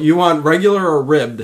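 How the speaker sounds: ordinary delivery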